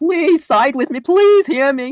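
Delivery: very high, loud, fake sobbing and blubbering, pleading. Mocking the idea of begging viewers to take sides: mock crying blubbering plea. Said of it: "blubbering like a fucking whale".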